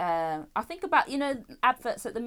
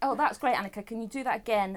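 ordinary delivery

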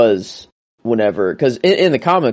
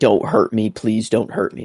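mock crying, panicked child voice, freaking out; 4 dB quieter than usual. Retelling a scene where a kid panicked, imitating the kid crying. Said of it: "started crying, freaking out".

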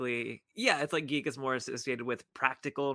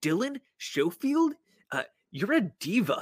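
dopey, high, drawn-out put-on voice. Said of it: "putting on this dumb voice".

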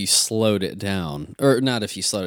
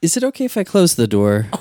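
mock, pitched-up voice, as sweet as humanly possible; 9 semitones higher, 8 dB louder than usual. Retelling what his wife asked while he practiced music, imitating her sweetest voice. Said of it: "She said it in the sweetest way possible".

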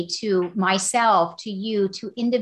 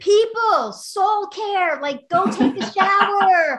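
big, booming voice from on high, slow; 11 semitones higher, 4 dB louder than usual. Imagining being omniscient, the speaker addresses people in a loud booming voice. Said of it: "I would make it the big booming voice".

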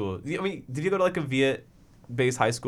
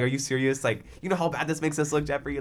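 ordinary talk

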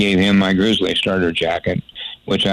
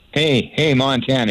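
mock man's yell, calling out from afar; 6 semitones higher than usual. Retelling how a man across the fence called out: imitating a man yelling. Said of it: "he yells".

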